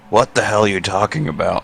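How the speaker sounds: hushed whisper, in a character voice. Playing a character who whispers to a companion: whispering in character. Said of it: "I whisper to him".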